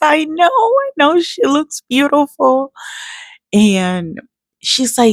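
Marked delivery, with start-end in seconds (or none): 0.0-2.7 mock very high, slow, weepy, tearful crying speech. Retelling a reply to a teacher after starting to cry: retelling own words while crying. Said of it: "And I just started crying".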